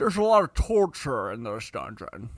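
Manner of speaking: attempted Scottish accent, pushed hard. Trying harder after suggesting doing a Connery: Sean Connery impression. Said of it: "If we're doing a Connery".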